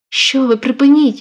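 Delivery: loud exclaiming cry. A woman embraced despite her resistance tells him to stop, exclaiming. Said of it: "вигукнула вона".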